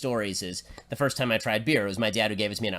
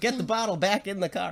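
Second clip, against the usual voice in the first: put-on scream, higher; 10 semitones higher than usual. Retelling a hot car ride on the freeway: imitating a screaming dad. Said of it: "my dad's screaming at him".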